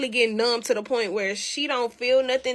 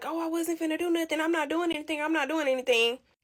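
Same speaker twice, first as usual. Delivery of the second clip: put-on apologetic tone, higher; 5 semitones higher, 4 dB quieter than usual. Telling how her mom rammed his car, imitating a man apologizing. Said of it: "he's sitting there apologizing like".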